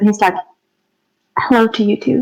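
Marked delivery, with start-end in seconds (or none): 1.4-2.2 whispering quietly, hushed. Voicing a character greeting a bat: whispering quietly. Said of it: "he whispers quietly".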